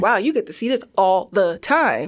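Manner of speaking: ordinary talk, nothing marked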